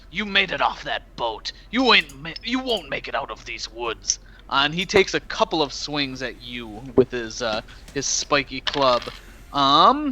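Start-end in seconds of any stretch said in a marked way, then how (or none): 0.1-4.1 snarling, snarled, hostile voice. Narrating a fight to a player, the speaker voices the enemy, snarling. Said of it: "he snarls and says".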